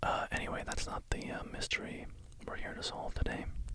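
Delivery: hushed whisper without breathiness.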